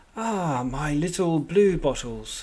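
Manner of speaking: menacing, sinister voice dripping with malice. A laughing thing from the mirror whispers in your mind: sinister, malicious voice. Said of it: "A sinister voice, just dripping malice".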